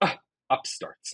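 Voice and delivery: scoffing under breath. In a tabletop game, a player voices her character's reaction, scoffing under breath. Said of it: "scoffs and under her breath says".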